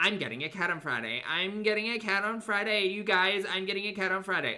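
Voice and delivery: put-on, high, teasing, needling, boastful taunt. Retelling how someone taunted their haters online: imitating someone taunting. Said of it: "you taunted the audience".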